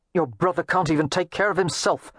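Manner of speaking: harsh, hard, with no softness. Narrator reads Mary Penn cutting Wynne off, harsh. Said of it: "said harshly".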